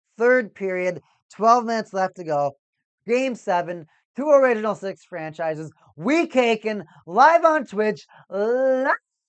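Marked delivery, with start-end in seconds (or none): 6.0-9.0 piercing, drawn-out shrill voice. A streamer announces being live on Twitch during a hockey game: shrill voice. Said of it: "that was a shrill voice".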